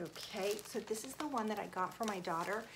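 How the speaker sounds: soft, hushed, quiet talk. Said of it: "I'm gonna talk a little bit quietly so she doesn't hear".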